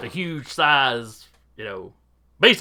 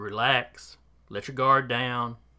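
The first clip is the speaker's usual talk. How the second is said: very calm, quieter hypnotist voice; 3 semitones lower, 6 dB quieter than usual. Voicing Doctor Brain locking eyes to hypnotize someone: very calm voice. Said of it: "just a very calm voice".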